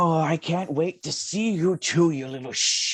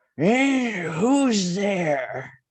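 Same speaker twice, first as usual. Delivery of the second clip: distant, tinny voice with hollow echo; 3 semitones higher than usual. Voicing a faraway figure answering a call in the game, in a distant, echoey, tinny voice. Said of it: "a very sort of distant, echoey, tinny voice".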